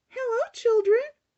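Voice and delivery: sugary, sweet, very high-pitched voice. Narrator reading a children's story as Miss Nelson greets the children, sweet Miss Nelson voice. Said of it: "someone said in a sweet voice".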